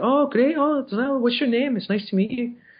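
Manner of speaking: put-on very high, light Scottish-accented voice. Retell how he greeted you when you wanted to shake his hand, really good Grant Morrison impression. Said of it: "that's a really good Grant Morrison".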